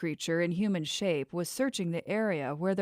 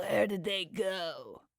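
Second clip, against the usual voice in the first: odd croaking voice, drawn-out words. Reading a story aloud, a strange man speaks up, croaking in a strange voice. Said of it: "the man croaked out in a strange voice".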